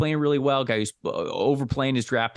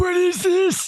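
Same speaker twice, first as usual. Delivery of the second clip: very high, loud, creaky cartoon old man voice; 5 dB louder than usual. Acting out how he and his co-host fumble with Discord, in a mock old man voice. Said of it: "You have a good old man voice".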